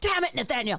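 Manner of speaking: staged, fake burst of rage. Demonstrating to the other speaker how the speaker once screamed at him, mock rage. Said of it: "we're going to demonstrate me getting into a rage".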